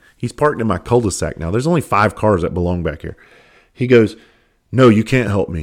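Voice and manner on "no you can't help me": put-on attitude, slower. Speaker retells a stranger parked in the cul-de-sac refusing help, retelling a line with attitude. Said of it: "He said it with an attitude".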